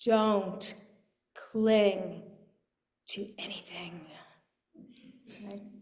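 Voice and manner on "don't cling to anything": firm, emphatic, heavily stressed delivery. Quoting the scholar's warning at the meditation's end: imitating an emphatic warning. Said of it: "he emphatically warns at the end".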